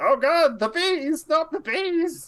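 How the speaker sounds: put-on very high, drawn-out elderly man's wail. Voicing a man panicking as bees swarm him: old man voice. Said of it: "You hear an old man voice".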